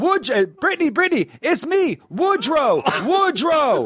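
shrill, very high, repeated scream. Retelling how a comedy sketch opens, imitating Woodrow screaming. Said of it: "He just keeps screaming".

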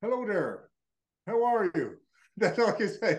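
attempted put-on Irish accent, swooping. Asked to do an accent, the speaker attempts an Irish accent. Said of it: "Do your accent. Go on, do your accent".

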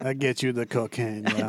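put-on French Mexican accented guy voice. Doing a bit as a guy on a Mexican beach: French Mexican beach guy impression. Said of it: "the French Mexican guy".

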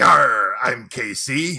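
put-on pirate voice. Podcast host signs off the episode with his name, in a pirate voice. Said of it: "We're doing pirate voices".

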